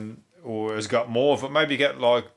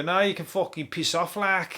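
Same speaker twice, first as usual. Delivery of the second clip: working-class Scouse accent, pitched up; 6 semitones higher than usual. Imagining the Alexa replying in a Scouse accent, speaker does Alexa in working-class Scouse accent. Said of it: "like the working class version".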